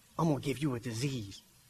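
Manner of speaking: very low, hushed, barely audible half-whisper. Asking listeners whether he has ever half-whispered to them, imitating a half-whisper. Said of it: "He ever whispered to you".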